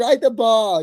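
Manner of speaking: put-on eighty-year-old Boston man voice. A fan talking about a team's offense says it like an eighty-year-old Boston guy. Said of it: "I'm gonna sound like an eighty year old old guy".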